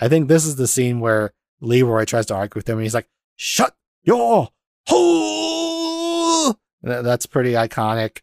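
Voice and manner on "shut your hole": put-on very high, unhinged shriek, drawn out. Acting out the scene where Leroy argues with him, retelling an insane yell. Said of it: "He's just yelling at everybody".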